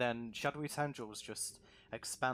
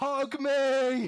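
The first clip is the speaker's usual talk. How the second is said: shrill, very high, very loud shout; 14 semitones higher, 13 dB louder than usual. Narrating an axe strike as an unseen voice cries out: shouting. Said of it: "you just hear a voice shout".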